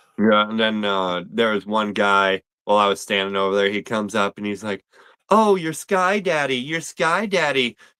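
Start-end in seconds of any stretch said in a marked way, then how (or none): 5.3-7.7 mock derisive, jeering voice, high and slow. Recounting a man who walked up to the speaker, imitating a mocking taunt. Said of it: "and like mockingly".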